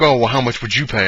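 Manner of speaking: usual speaking voice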